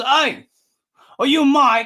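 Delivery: loud, slow, drawn-out calling voice. Retelling a gentleman who walked up asking if the speaker was mike; impression of a stranger. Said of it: "I'm going to do my impression as best I can".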